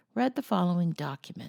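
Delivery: ordinary delivery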